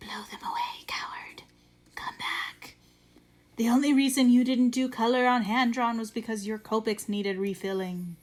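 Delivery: nasty, goading, evil gremlin voice. Acting out the inner voice taunting about color pages: evil gremlin voice. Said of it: "this evil gremlin voice in the back of my head".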